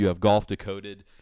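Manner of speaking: ordinary talk, nothing marked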